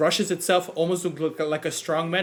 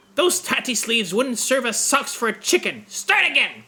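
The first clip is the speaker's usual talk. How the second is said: high, scratchy voice crying out; 7 semitones higher, 4 dB louder than usual. Narrating a scene, voicing an unseen speaker in a cluttered room: scratchy crying-out voice. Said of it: "cries a scratchy voice".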